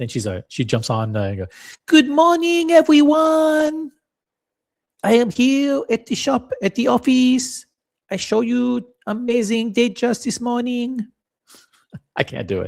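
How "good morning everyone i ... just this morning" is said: put-on French-Israeli accent. Imitating how she greets everyone, in Jules's French-Israeli-Moroccan accent. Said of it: "that French, Israeli, Hebrew, Moroccan accent".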